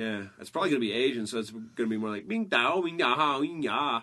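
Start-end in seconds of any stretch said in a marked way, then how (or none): 2.3-4.0 very slow, drawn-out, made-up Mandarin syllables. Joking about a future invader's voice: mock Mandarin-sounding voice. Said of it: "That was perfect Mandarin".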